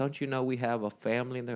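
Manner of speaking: furious, livid, scolding woman's angry outburst. Retelling what a woman said to him after he hit her, imitating an angry woman. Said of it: "she starts getting angry".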